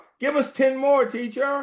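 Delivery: put-on, very high hollered-out voice. Retelling asking teachers for more problems: imitating own past holler. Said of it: "I would holler out".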